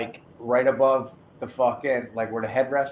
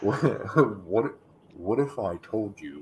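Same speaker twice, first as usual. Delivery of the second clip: put-on documentary narrator voice, lower; 3 semitones lower than usual. Asking a question in a mock documentary voice: 30 for 30 narrator voice. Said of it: "should I do the thirty for thirty voice".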